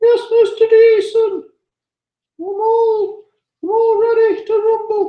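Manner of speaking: very high-pitched character voice. Voicing Dangerous Dave replying to Mr. Geeson, in a very high-pitched Dangerous Dave voice. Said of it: "He's got a very high pitched voice".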